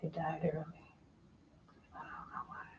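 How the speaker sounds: soft, hushed, barely audible whisper. Answering a question about how the parents died, whispering. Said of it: "You're whispering".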